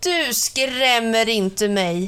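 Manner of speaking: shouting out, calling out loudly. Anja, thinking Ivan is playing a prank, confronts the ghostly figure, calling out.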